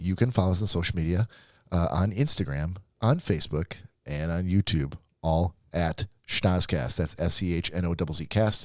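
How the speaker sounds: slow, deliberate, carefully paced, spelled-out delivery. Podcast host repeating the social media handles, talking slowly. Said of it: "I'll talk slow".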